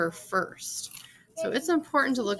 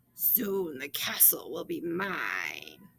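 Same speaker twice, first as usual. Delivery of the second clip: low, hushed dragon voice, "mine" drawn out; 4 semitones lower, 6 dB quieter than usual. A video lesson shows reading story lines aloud, giving the dragon's line a dragon voice. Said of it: "say it in a voice to match who's talking".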